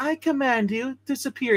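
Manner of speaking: very high, snotty cartoon villain voice. Speaker discussing a cover quotes the character from the animated series; imitating his snotty cartoon voice. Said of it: "in his little snotty voice from the animated series".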